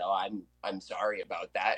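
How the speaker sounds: put-on sheepish tone. Recounting apologizing to the group after yelling on a recording, retelling a sheepish apology. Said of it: "looked at you guys sheepishly and I said".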